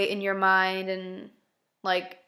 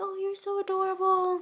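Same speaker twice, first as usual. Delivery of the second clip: put-on very high baby talk voice; 11 semitones higher than usual. Retelling how they talk to a dog they get to play with, baby voice. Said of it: "Like I use the baby voice".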